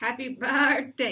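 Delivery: bleating, little-sheep-like voice. Giving a birthday shout-out on a Bible storytime show, sounding like a little sheep. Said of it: "You sounded like a little sheep".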